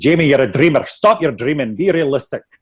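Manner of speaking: Scottish brogue. Speaker quoting what their dad told them, in his Scottish accent. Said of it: "He said it with his Scottish accent".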